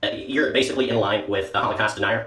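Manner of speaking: nasal, ultra-sarcastic put-on impression voice.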